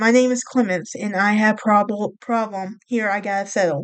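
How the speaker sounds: ordinary delivery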